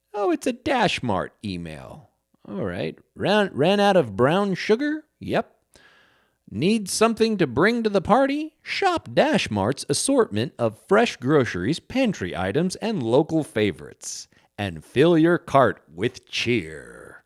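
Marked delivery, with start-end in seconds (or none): 3.5-17.0 booming, sing-song commercial announcer voice. Reading an email aloud, joking about being an announcer: reading like a voice announcer. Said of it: "I should be a voice announcer".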